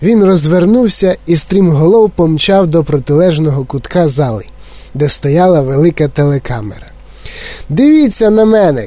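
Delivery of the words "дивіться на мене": high-pitched call, called out. Mike Teavee runs toward the television camera: shouting while running. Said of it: "кричав він на бігу".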